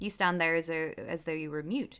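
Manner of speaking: plain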